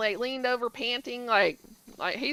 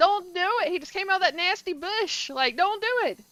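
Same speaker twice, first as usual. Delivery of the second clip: play-acted, pitched-up yell; 6 semitones higher than usual. Retelling watching a show, yelling at a character: imitating yelling at the screen. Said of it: "I'm over there yelling at my girl".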